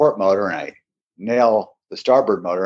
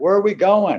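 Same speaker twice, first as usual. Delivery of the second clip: acted, high-pitched screaming shout; 11 semitones higher than usual. On a speeding boat, asking him where they are going, retelling screaming at him. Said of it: "I'm kind of screaming at him".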